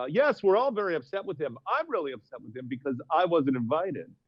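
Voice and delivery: put-on yacht rock radio DJ voice. Retelling his local news interview about a neighbor's party, yacht rock radio voice. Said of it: "in a voice like this, sort of like yacht rock radio".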